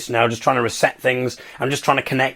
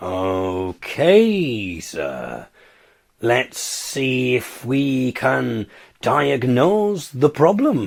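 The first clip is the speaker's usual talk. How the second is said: very slow, lulling, trance-inducing delivery. Imitating a broadband support agent on the phone, talking really slow. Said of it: "they just talk really slow to you".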